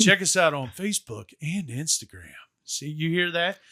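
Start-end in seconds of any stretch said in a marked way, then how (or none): 0.0-2.3 smooth put-on radio DJ announcer voice. Plugging their Facebook and Instagram, smooth radio announcer voice. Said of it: "That was like my radio talk".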